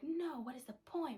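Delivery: high-pitched shouted retort. Retelling yelling back at a man who screamed at him; retelling own yell. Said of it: "I yell back at him".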